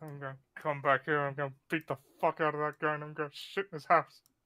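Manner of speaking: muttered, grumbling under the breath. A tabletop character walks down with the others, muttering under breath. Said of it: "muttering under my breath".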